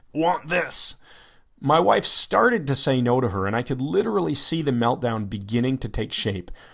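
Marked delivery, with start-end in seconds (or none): 0.2-1.0 put-on high, primitive cave-child voice. Retelling what she said while pointing at them, in a cave child voice. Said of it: "said in her cave child voice".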